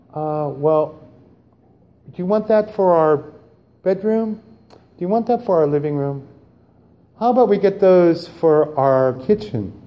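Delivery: kindly, gentle, sweet, with a drawn-out well. Speaker acts out the spouse shopping at Bed Bath & Beyond, imitating gentle David. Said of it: "good David, gentle David".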